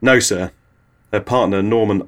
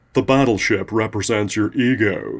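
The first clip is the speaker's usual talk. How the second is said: bogus put-on American accent drawl. Imagining a doctor analysing a dream, in his bogus American accent drawl. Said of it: "he will drawl in his bogus American accent".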